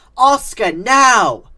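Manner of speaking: very loud, high-pitched holler. Narrator reads Raj calling out to Oscar: hollered. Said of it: "Raj hollered".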